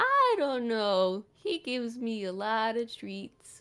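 put-on little cartoon turtle character voice. Voicing a turtle answering a question, in a turtle voice. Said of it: "I love your turtle voice".

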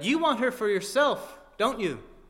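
enraged, accusing yell, high and loud. Alex shouts at Victor, who is shielding Natasha, an angry shout. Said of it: "Angered, Alex shouted".

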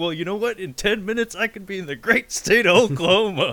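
very high-pitched, jeering, mocking taunt. Retelling a cartoon scene where a fan taunts Hank Hill: retelling a mocking taunt. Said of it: "he starts mocking Hank Hill".

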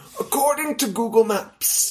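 narrator voice like a wildlife film. Reading a story's first chapter aloud, in David Attenborough voice. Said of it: "I'm going to read it in the voice of David Attenborough".

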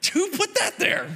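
furious, very high, through gritted teeth. Retelling a fall at church as pastor: imitating a furious, teeth-gritted question. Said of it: "through the gritting of my teeth".

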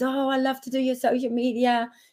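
eager, enthusiastic tone. Retelling an offer to run social media: imitating someone excited. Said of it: "really excited".

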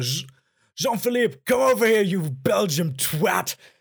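mock furious, raging shout, loud and high. Retelling how Gordon Ramsay loses it and calls someone over: imitating Gordon Ramsay raging and shouting. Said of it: "Gordon Ramsay wieder ausrastet und dann ruft er halt so".

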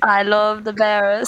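put-on British-sounding accent. Saying the group's catchphrase into the mic: British accent. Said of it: "That's more British".

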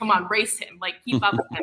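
ordinary talk

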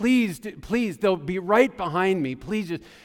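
urgent, begging, pleading voice. Recounting begging an agent to hold the door for their family, retelling her own begging. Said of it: "I begged the agent".

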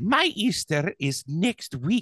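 slow, drawn-out, offended tone.

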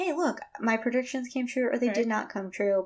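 ordinary talk, nothing marked

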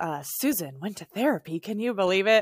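put-on old lady gossiping whisper. Acting out a therapy meme of an older lady gossiping: imitating an older lady whispering. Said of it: "the sixty-five-year-old lady's whispering".

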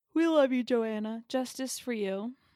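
talking through a yawn. Cheering on the woman picked as crush of the week, talking through a yawn. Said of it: "I was yawning when I said that".

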